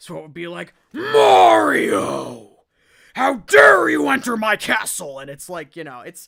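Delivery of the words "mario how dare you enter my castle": booming, rough, slow, loud, swooping, drawn-out growl. Recalling reading Bowser's lines during text-based games, in a Bowser voice. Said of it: "I was required to be the one to read for Bowser".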